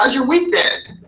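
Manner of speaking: very high-pitched, eager-to-please, approval-seeking tone. Demonstrating how approval-seeking people sound, at a very high pitch. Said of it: "Very high pitch".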